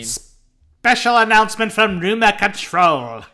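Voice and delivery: high, loud, nasal, grating put-on British accent. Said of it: "the most nasally, annoying British voice".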